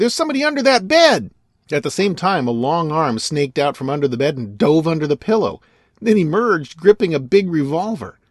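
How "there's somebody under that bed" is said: very high, startled, sudden yell. A detective searching a room suddenly spots someone, crying out. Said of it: "he cried".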